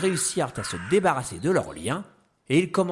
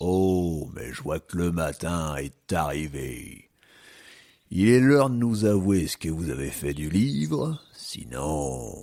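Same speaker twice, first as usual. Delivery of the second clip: menacing, threatening, very low tone; 8 semitones lower than usual. After the failed escape wakes the camp, the chief addresses them in a menacing tone. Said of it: "d'un ton menaçant".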